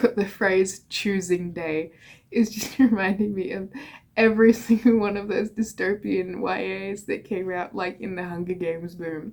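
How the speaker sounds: amused, giggling, laughing while talking. Speaker admits being petty, then carries on, laughing while talking.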